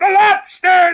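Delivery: very high-pitched, very loud, shrill booming shout. Bounding into the air while explaining a dance; shouting. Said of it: "The Gryphon shouted with a bound into the air".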